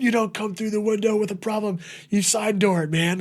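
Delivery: play-acted shrill, very high, furious yelling. New server retelling how everyone screamed at him for coming through the window. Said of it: "everyone just screamed at me like".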